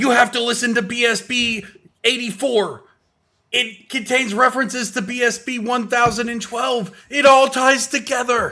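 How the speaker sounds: loud, very high-pitched shout. Imagining someone shouting excitedly about a podcast: imitating Harry shouting. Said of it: "I'm also imagining Harry just shouting".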